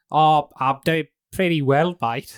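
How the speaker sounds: put-on nasal voice. Greeting the chauffeur while in disguise: nasal disguise voice. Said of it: "the nasalness down".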